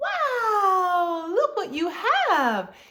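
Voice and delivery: very high parentese with long, stretched-out words. Showing parents how to talk so their child tunes in, high-pitched stretchy voice. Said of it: "use a higher pitch voice".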